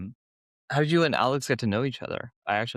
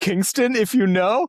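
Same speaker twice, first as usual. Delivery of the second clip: high, loud, mock-snobby, tossed-off delivery. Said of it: "Dude, what a douche".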